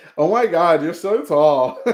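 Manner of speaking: high, weird, put-on Californian accent. Being deliberately annoying, the speaker puts on a weird californian accent. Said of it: "that weird California voice".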